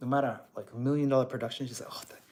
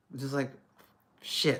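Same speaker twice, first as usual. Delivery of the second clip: plain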